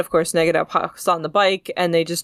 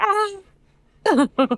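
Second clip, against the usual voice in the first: piercing, shrill, very high screech. Retelling a cartoon scene where Negaduck keeps screaming: imitating Negaduck screaming. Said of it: "on Negaduck, screaming".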